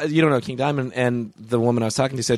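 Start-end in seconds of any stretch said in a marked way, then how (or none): none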